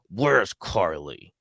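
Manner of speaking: bossy, demanding voice, dropped low. Retelling a French-fries offer for a photo, imitating Ellie's lowered voice. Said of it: "Lower, lower the voice".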